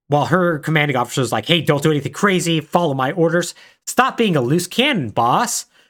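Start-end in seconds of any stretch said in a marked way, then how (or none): none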